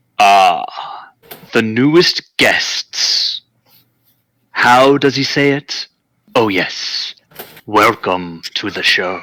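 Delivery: slow, slithering, sinuous, floating voice. Voicing an unseen creature greeting the party: sinuous voice. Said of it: "a sinuous voice seems to float around the room".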